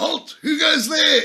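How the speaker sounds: very high, loud, top-of-the-lungs shout. Re-enacting shouting at a guy supposedly running away: retelling a top-of-voice shout. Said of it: "I shouted at the top of my voice".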